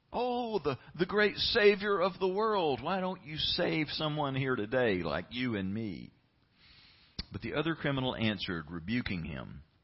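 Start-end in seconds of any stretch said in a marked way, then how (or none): 0.1-6.1 play-acted sarcasm, high and swooping on every word. Retelling a criminal's insult to Jesus from the cross: imitating a dripping sarcastic taunt. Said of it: "hear the sarcasm dripping from every word".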